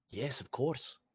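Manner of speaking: soft whisper. Answering another player's character in a quiet spot: whispering in character. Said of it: "I just kinda whisper".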